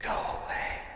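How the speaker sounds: wispy, faint, barely-there whisper. Describing a scene, a voice comes from somewhere nearby: slight faint voice. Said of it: "you hear a slight like voice".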